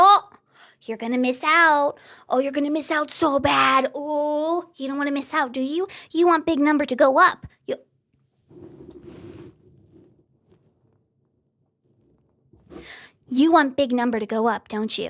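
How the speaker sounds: mocking put-on voice of a pushy app. Mocking how watch-streak features push viewers: mocking a watch-streak app. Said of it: "watch streaks is very just like".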